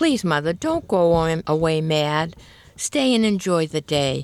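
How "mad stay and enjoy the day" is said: plain reading voice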